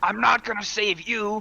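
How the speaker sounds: furious yell. Raging in combat, shouting at a figure hunched under a shield: raging shout. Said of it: "I'm gonna rage, and I'm gonna s-, shout".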